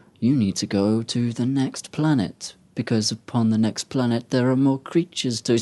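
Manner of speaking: deliberate, unhurried, slow, drawn-out delivery. Complaining about a game's slow character, imitating the Queen of Blades' slow speech. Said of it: "she speaks so slowly all the time".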